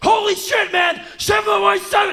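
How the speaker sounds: very high, very loud, shrill scream. Retelling reading a script aloud alone in a bathroom: imitating own past yelling. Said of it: "prepare to read it at the top of my lungs".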